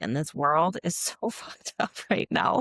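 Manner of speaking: speech broken up by laughing. Describing depleted mothers and babies to another speaker, laughing while talking. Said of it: "I can't say it without laughing".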